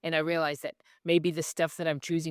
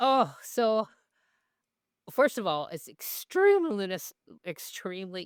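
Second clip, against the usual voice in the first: excited, eager gushing in a high swooping voice; 5 semitones higher, 4 dB louder than usual. Talking about loving Ready Player One, speaker uses an excited high-pitched voice. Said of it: "excuse my high pitched voice there".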